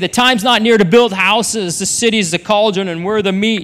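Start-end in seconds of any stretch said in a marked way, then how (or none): none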